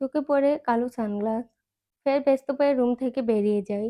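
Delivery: plain reading voice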